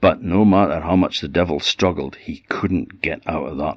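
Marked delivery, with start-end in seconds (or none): none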